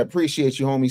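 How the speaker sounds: ordinary talk, nothing marked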